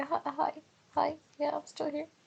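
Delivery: tiny, very high, soft little voice. Imitating someone on a call answering hello: imitating his little voice. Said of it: "his little voice".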